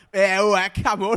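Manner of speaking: imitated English accent. Describing people doing english accents: imitating an english accent. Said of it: "English accents".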